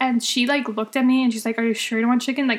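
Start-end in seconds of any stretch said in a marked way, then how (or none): 1.6-2.5 play-acted condescending, judgy, doubtful, talking-down tone. Retelling how a server questioned an order: imitating a condescending tone. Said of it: "in the most condescending, like, way".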